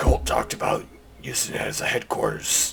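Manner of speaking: rough, gruff, rasping put-on character voice. Voicing a pompous bard character's reply: gruff voice. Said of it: "he'll kind of say back in a gruff voice".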